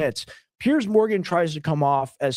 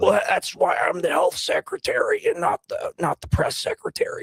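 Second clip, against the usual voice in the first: strained, throat-hurting voice on every word; 4 semitones higher than usual. Doing an RFK impression on request after being asked: RFK Jr. impression. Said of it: "Do your best R F K impression".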